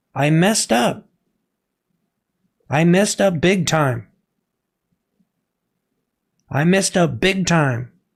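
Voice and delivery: shaken and emotional. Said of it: "I'm trying not to get emotional right now".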